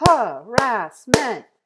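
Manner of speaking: very loud, high-pitched, each syllable split apart. Leading students in clapping out the syllables of a word: clapping out syllables. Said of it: "clap this one out".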